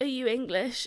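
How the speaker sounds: mock voice on the edge of tears. Retelling asking a stranger a question: retelling being close to tears. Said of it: "literally just about to cry".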